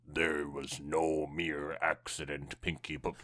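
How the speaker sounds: low, eerie, spine-tingling spooky voice. The speaker beside her starts talking to her in a low spooky voice. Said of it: "emit a low-pitched, spine-tingling voice".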